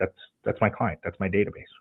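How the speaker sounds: ordinary talk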